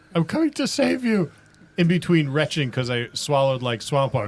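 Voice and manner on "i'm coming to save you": very high-pitched shouting yell. A player's character swims through swamp water toward a companion, yelling. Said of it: "I'm I'm I'm yelling".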